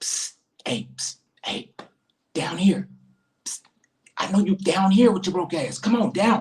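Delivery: high, whispering bumblebee voice with psst sounds. Voicing the bumblebee calling up from the bottom shelf: bumblebee whispering. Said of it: "I always imagine the bumblebee whispering up".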